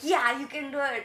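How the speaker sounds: loud, high, screaming, encouraging yell. Retelling how a player behind on score screamed to himself: imitating someone screaming. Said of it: "he was screaming".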